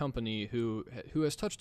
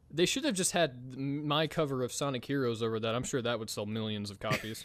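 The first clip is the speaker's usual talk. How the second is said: ordinary talk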